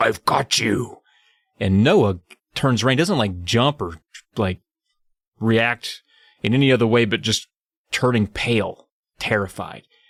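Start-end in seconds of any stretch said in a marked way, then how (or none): 0.0-1.0 low, deep, rough, menacing growl. Telling a story of a voice behind Noah, deep growl. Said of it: "it comes out as a deep growl".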